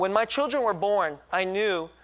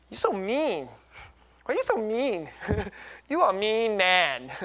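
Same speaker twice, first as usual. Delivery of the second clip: put-on playful sarcastic teasing, higher; 4 semitones higher than usual. Retelling how his wife teases him: imitating wife's sarcastic teasing. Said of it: "she's saying it in a kind of sarcastic, ironic way".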